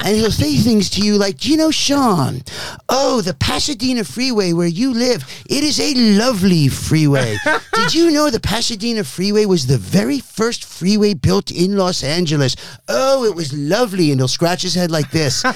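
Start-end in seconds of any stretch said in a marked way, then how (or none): 1.4-14.1 showy, stagey, theatrical actor delivery. Imitating an undiscovered Los Angeles actor talking to Sean, imitating an undiscovered actor. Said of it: "And he sounds like this".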